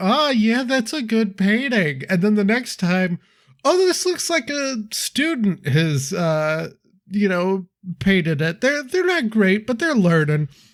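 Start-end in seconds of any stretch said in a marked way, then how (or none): 0.0-2.0 acted sarcastic, praising tone. Describing walking up to a kid's bad painting, acting out sarcastic praise. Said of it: "you kind of sarcastically be like".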